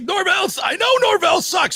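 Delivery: very high, all-caps yelling rant. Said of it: "He's always yelling at me".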